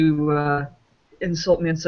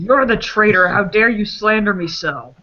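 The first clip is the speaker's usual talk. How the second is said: indignant, furious, angry delivery; 3 semitones higher than usual. Playing an angry character who yells at an accuser: angry yell at a traitor. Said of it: "I'm going to yell at him".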